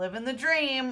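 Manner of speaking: sarcastic, play-acted, ironic over-bright cheer. Imitating people who answer how they are, in a put-on sarcastic tone. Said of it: "Kind of like when people are like".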